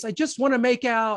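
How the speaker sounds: high, whimpering, small voice. Retelling using an actor's film line on a girl in college: retelling in a whimpery voice. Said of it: "in that whimpery voice".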